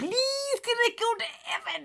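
high, pleading, begging voice.

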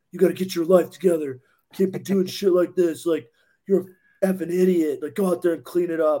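fatherly, dad-style scolding yell. Retelling how Alec yelled at the speaker to clean up, imitating Alec yelling. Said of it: "Alec was like yelling at me like my dad".

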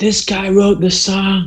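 shrill, loud shout, pitched very high. Recounting what his buddy was yelling at the time, retelling a friend's yell. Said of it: "My buddy who I was with was yelling".

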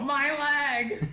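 mock shrieking, very high, loud hollering yell. Retelling a guy thrown in a volcano: imitating a man yelling. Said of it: "you hear the guy yell".

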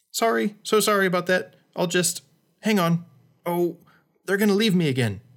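tiny, small, high little voice. Narrator reading a story voices the fluttery thing that blew into the walker's eyes: tiny voice. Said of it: "he heard a tiny voice".

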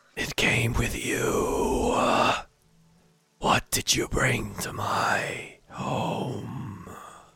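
creepy, eerie ghost voice. Voicing a ghost warning a player: creepy ghost voice. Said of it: "Creepier than the other voice".

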